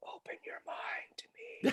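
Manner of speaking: quiet whispered line.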